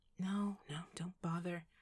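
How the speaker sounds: tired, worn-down, slow weary voice. A woman turns down a man's offer to go after someone, weary. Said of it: "she said wearily".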